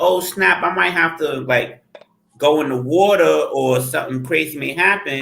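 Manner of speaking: usual speaking voice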